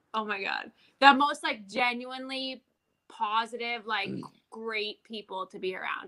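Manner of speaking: voice catching, choked up, about to cry. Praising him to another speaker, about to cry. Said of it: "I'm gonna start crying".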